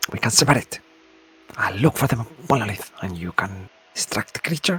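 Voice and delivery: whispering in a put-on voice. Speaking in a character's voice to a partner: whispering in character. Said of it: "something like that".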